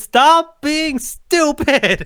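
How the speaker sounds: slow high-pitched yelling. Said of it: "almost yelling at the screen".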